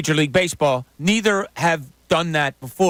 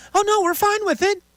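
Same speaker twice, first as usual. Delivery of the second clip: uptalk, statement rising on final "it". Quoting what he said back to them, imitating uptalk. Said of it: "that uptone kind of ends in a question".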